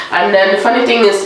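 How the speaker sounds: ordinary talk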